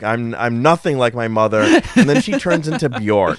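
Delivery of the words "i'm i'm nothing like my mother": ordinary talk, nothing marked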